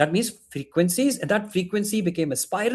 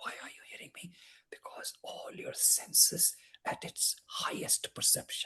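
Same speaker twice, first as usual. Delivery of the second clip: hushed, breathy whisper, barely audible; 15 dB quieter than usual. Addressing everybody listening: whispering. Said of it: "even though I'm whispering".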